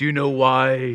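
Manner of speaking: slow growling voice, dragging out why. Act out a man starting a question to a newspaper man in World War II, imitating a growling voice. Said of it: "that growling voice he had".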